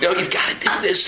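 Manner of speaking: acted-out, very high, desperate begging scream. Retelling a moment of desperately trying to stop someone from walking away, imitating screaming and begging. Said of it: "and I'm just screaming".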